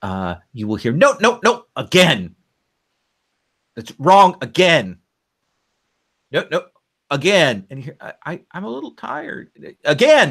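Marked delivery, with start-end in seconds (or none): 0.9-7.7 stern, strict, raised drilling-instructor voice. Narrator tells the listener what they will hear, an instructor drilling: stern instructor voice. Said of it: "the sort of stern voice of, of an instructor".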